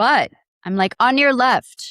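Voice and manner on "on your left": really loud call, high-pitched. Retelling passing the runner man at the park: imitating saying it loudly. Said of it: "And I said it really loud".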